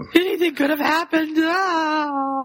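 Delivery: acted distraught screaming, high, fretful, drawn out. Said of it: "who's all upset and screaming".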